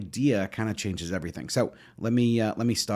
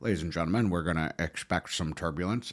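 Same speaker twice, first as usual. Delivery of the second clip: low airline captain announcer voice; 4 semitones lower, 7 dB quieter than usual. Describing turbulence, imitating a plane captain's announcement in an airline captain voice. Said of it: "It's just my captain voice".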